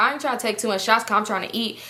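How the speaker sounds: plain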